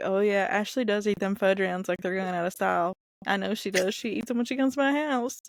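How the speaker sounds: normal talking voice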